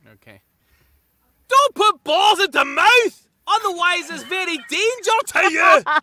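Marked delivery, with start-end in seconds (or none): 1.5-5.8 very high, shrill yelling in Scottish accent. Playing a scottish farmer shouting at a person, shouted scottish accent. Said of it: "I'm gonna do it as a Scottish farmer, ... I'm gonna be shouting at a person".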